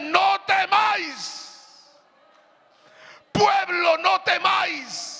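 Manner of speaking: very high, slow, commanding voice of authority. Quoting God's word telling the people not to fear: imitating a voice of authority. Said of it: "con voz de autoridad le dice".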